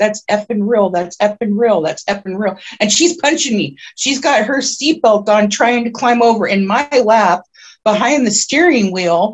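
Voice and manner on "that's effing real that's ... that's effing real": ordinary delivery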